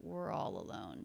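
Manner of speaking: very low, soft, creaky, half-voiced mumble. Demonstrating a three-word thought group, very mumbled. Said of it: "a very mumbled three word thought group".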